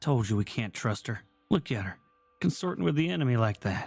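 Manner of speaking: whispering in character. Leaning over to warn a companion about an ally: whispering in character. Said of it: "lean over and whisper to Oliver".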